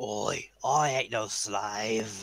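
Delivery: put-on alien pirate accent. Playing a woozy slave from the ship coming around, Weequay accent. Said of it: "going with the uh, the Weequay accent they had in Clone Wars".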